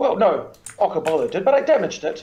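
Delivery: plain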